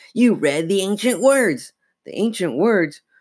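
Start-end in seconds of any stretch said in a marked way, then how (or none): 0.1-1.7 very high, raspy dummy voice. A living dummy answers a disbelieving Chris: raspy voice. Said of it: "He blinked again. He giggled. His mouth open, making his grin grow wider. He tried to tug out of [name]'s grasp, but she hung on without even realizing she was holding him. "But you're a dummy," she squealed. He giggled".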